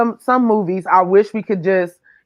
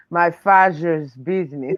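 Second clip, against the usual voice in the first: put-on villain voice; 4 semitones lower than usual. Trying to say a line the way the other person says it, in a Doctor Evil voice. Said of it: "Let me see if I can say it like you. ... That was Doctor Evil".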